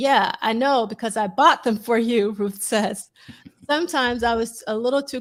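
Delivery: plain reading voice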